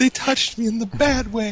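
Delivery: blubbering fake sobbing, pitched very high. Acting out a friend showing up at the doorstep: mock crying. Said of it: "just crying".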